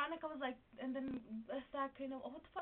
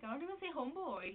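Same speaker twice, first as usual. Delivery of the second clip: plain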